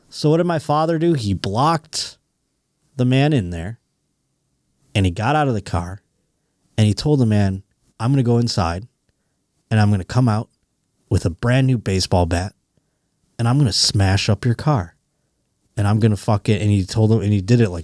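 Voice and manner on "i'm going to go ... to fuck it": imitated calm, menacing voice. Retelling the father threatening a driver who took the spot: imitating a calm threat. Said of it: "in a very calm way".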